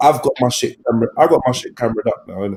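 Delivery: very low, hushed, under the breath. Joking that the neighbours might overhear about the cameras: said very low. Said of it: "I'm gonna say this very low".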